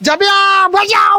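shouting out.

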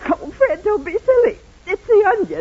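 teary, brushing it off. Mary answers Fred before Uncle Joe arrives, teary. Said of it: "You mean that's what's making you cry?".

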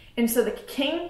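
normal talking voice

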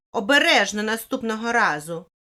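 loud, indignant yelling. Sara shouts at her friend Michelle, who spoiled her drawing: shouting. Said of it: "кричала Сара на свою подругу".

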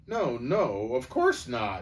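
rather shocked, scandalized, taken-aback, slow. Reading Bree's reply when asked about Aslan, in a rather shocked voice. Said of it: "said Bree in a rather shocked voice".

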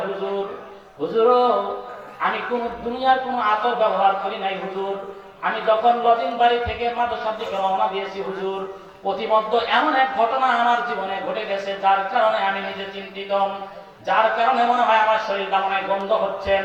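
ordinary talk

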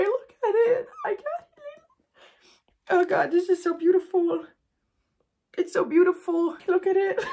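high, choking up, crying despite holding back tears. Opening something sent from YouTube, choking up, about to cry. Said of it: "Trying hard not to cry, but I'm gonna cry anyway".

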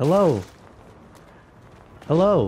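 very loud, mechanical robotic voice. Retelling a weird phone call from a bot, robotic bot voice. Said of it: "It sounded like a bot".

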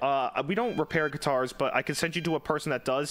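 ordinary talk

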